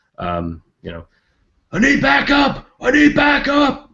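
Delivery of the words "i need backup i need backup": very high, shrill, all-out, top-of-lungs screaming yell. Voicing a fleeing enemy calling for help: yelling at the top of his lungs. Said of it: "he's yelling at the top of his lungs".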